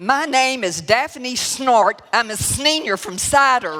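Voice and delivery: very loud, high, nervous near-screaming yell. Retelling standing up to introduce herself, in a near-screaming yell. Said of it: "in close to a screaming voice, I yelled out".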